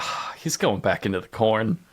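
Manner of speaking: acted, deflated, let-down, very disappointed voice. Retelling how Willie looks back at the others: imitating Willie's very disappointed tone. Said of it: "in a very disappointed tone".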